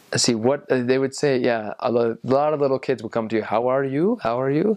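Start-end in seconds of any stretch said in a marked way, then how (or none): 3.4-4.7 put-on English with Indian accent. Recalling what little kids would say to them on a mission: indian accent. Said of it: "On the Indian accent".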